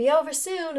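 put-on Mississippi accent, pitched high. Performing own lines from a play after being asked: Mississippi accent. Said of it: "Mississippi accents".

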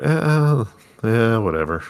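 glum, dispirited, depressed and downcast tone. Reacting to a surprising betrayal in the story: sounding depressed. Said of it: "you sound depressed".

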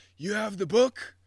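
grumpy, loud, high-pitched yell. Retelling how a grumpy ranger called to another ranger: imitating someone yelling. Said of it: "he yells to the other guy".

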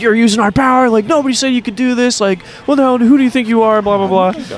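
high-pitched, yelling security guard voice.

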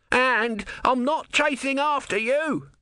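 shrill, very high, drawn-out scream. Narrator voices Om calling after Brutha, who has disappeared, screamed. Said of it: "Om screamed".

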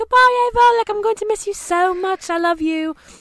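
put-on British accent, very high. Retelling saying goodbye to your friend Ava as she left: British accent. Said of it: "I was talking in a British British accent".

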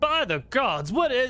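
startled outcry, belted out very high and loud. Narrating the scene, the speaker voices the lord heard from the balcony: loud Lord Campbell voice. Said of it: "the voice of the loud Lord Campbell saying".

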